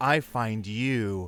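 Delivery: sultry, seductive, sensual, sexy woman's voice. Quoting a woman in a vr porn video, imitating a sensual woman's voice. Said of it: "it's like the most sensual voice".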